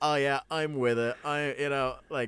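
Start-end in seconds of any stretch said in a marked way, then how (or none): 0.0-1.2 nerdy voice straining too hard to sound cool. Retelling a scene, imitating Kevin Nash as a sitcom nerd trying to be cool. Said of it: "the most sitcom nerd trying to be cool".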